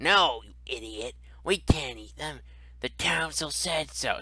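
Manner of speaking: goblin-like creature voice. One of two goblins scolding the other, in a goblin voice. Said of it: "sounds like seemingly goblinoid voices".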